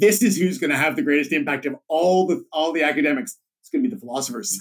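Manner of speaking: normal talking voice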